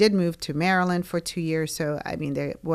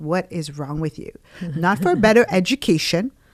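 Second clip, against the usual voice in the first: put-on angry scolding voice, louder; 5 dB louder than usual. Retelling how dad scolded after the visa interview: imitating dad scolding. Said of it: "hits me upside down the head, was like".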